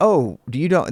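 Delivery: normal talking voice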